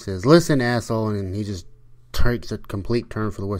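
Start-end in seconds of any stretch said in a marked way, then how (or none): 0.3-1.1 loud, raised yelling voice. Retelling a movie, a speaker acts out a woman yelling at a caller: retelling a yell. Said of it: "she's yells at him".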